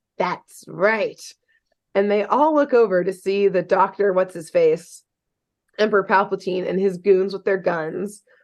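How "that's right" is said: eerie, creepy, creeping spider-like voice. Telling a story, voicing a character who answers: spidery voice. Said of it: "the same spidery voice".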